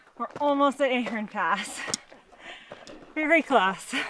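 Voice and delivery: slightly winded, catching breath, a bit breathless. Answering where they are near the top of a long hike: slightly out of breath. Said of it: "bit out of breath".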